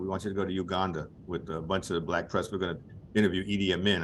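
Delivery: normal talking voice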